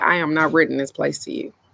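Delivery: put-on flat, deadpan, straight-faced delivery. Retelling a landlady refusing to rent the place: imitating a deadpan refusal. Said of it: "said with the straightest face ever".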